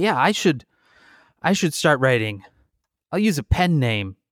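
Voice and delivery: ordinary talk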